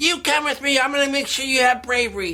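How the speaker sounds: mock, mildly exasperated and frustrated tone. Retelling a movie, voicing the girl as she gets frustrated: acting frustrated. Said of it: "She's getting kind of frustrated".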